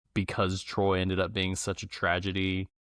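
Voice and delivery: plain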